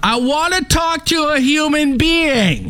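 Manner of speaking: play-acted, very high, deliberate drawn-out yell. Speaker retelling a call answered by an ai chatbot, retelling a yell into the phone. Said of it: "I immediately yelled into my phone".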